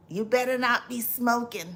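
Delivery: put-on raspy, rasping old grandmother voice. Speaker quotes an old-school grandmother lighting a cigarette, imitating her raspy voice. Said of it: "she says with her raspy voice".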